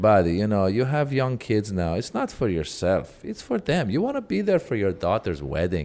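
put-on thick Persian accent. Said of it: "still has the thickest accent".

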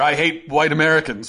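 ordinary talk

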